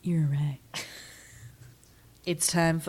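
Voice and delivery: soft, rushed, fake sexy phone-line voice. Moving the discussion on to the synopsis, speaker talks in a sex phone line voice. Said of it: "It was like a sex phone line".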